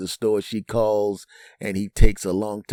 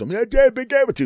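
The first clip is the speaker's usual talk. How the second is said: put-on mumbling tough-guy bravado, higher and louder; 4 dB louder than usual. Retelling a guest on the phone with his wife: imitating a mumbling tough guy. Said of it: "Captain Tough Guy goes".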